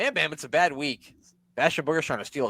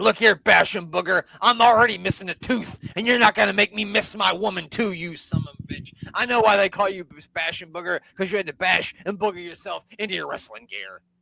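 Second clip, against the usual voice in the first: put-on New Jersey accent, raised and pitched up; 5 semitones higher, 5 dB louder than usual. Speaker retells what he said to another wrestler, in a jersey accent. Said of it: "He said that in a Jersey accent".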